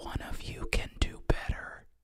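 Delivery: hushed, barely voiced whisper, leaning in close. Retelling how a character leans in to your ear: imitating a whisper. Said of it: "leans in and whispers into your ear".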